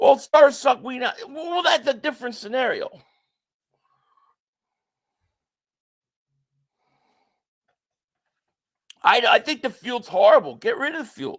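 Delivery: fed-up, mad-frustrated, exasperated outburst. Complaining about a team sitting its players, frustrated. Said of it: "I'm sorry I got mad frustrated".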